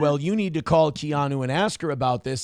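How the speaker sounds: normal talking voice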